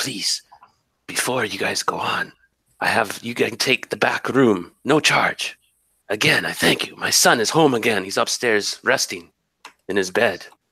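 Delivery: voice kept really low, hushed. Voicing the grateful bartender offering the back room: keeping voice really low. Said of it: "he keeps his voice really low".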